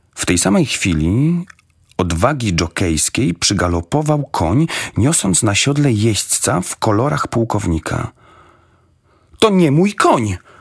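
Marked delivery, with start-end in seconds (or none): 9.3-10.3 sudden, high, raised exclaimed outburst. Narrator reading Ross as a rider gallops up in his colours, exclaiming. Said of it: "Wykrzyknął Ross".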